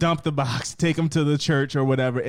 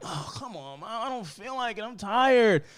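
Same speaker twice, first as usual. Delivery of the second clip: put-on tired, reluctant child voice, soft, pitched up; 7 semitones higher, 5 dB quieter than usual. Imagining the child's reply to the mother: imitating a tired, reluctant kid. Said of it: "And you're like".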